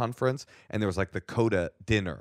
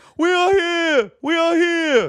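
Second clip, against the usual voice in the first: very loud, very high fake deaf scream; 10 dB louder than usual. Recalling audience members shouting back after he mentioned deaf parents: imitating screamed fake deaf voice. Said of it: "they started screaming in deaf in fake deaf voice".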